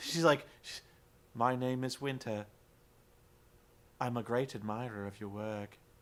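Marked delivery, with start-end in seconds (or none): 1.3-5.7 very low, flat, robotic monotone with no inflection. Retelling Winter meeting Angelina, imitating Winter's flat monotone. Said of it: "it was completely monotone, and she had no inflection to her voice".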